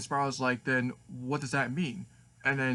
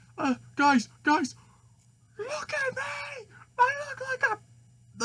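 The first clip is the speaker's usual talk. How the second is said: very high, very slow, rising scream; 4 dB louder than usual. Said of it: "he screams".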